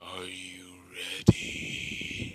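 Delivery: dark, foreboding, ominous breathy whisper. Narrating a battle story, the line given in a dark Ninetales voice. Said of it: "In a dark, foreboding voice, saying the Ninetales voice".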